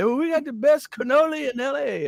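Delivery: mock, very high street-vendor shout. Describing a man yelling out a window at passersby, imitating his shout. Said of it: "he's screaming out the window".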